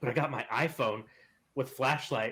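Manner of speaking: ordinary talk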